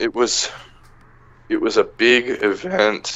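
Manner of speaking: voice cracking. Recommending a comic to another speaker, voice cracking. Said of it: "my voice is cracking a lot".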